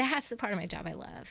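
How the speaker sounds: voice catching, choked up, moved. Describing the favorite part of the job, getting emotional. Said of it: "I'm getting emotional".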